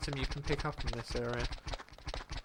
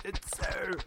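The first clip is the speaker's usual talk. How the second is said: higher voice, words pushed through a dry throat. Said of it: "My throat".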